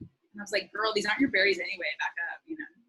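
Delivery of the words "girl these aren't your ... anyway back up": ordinary talk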